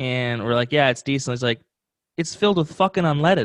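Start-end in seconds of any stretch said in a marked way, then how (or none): 2.2-3.5 put-on very thick Chicago accent, laid on thick. Retelling what a mechanic said after testing the gas, in a very chicago accent. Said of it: "like in a very Chicago accent".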